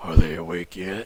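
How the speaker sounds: low, loud voice booming over a speaker. Narrating a scene, voicing someone heard over the intercom: low, loud intercom voice. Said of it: "like a little low, loud voice just say".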